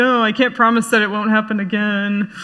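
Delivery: ordinary talk, nothing marked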